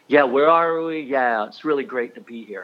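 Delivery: dripping sarcasm with fake gladness and insincere enthusiasm. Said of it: "like sarcastically".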